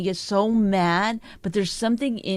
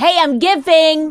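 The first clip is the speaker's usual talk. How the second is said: mock yelling, higher and louder; 8 semitones higher, 10 dB louder than usual. Imitating the partner giving gifts, mock yelling. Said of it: "don't yell".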